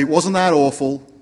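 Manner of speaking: normal talking voice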